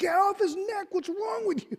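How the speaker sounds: very high, yelling scream. Retelling watching events on TV, imitating own screaming at the TV. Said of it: "I'm screaming at the T V".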